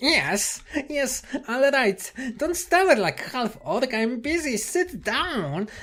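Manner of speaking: very high, squeaky little creature voice. A creature answers a visitor who has come to announce himself, in a squeaky voice. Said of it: "the silence is broken by a squeaky voice".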